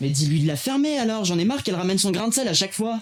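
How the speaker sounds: fed-up, heated angry outburst, high-pitched. During an argument with others in the room, shouting. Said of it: "Arrête de crier".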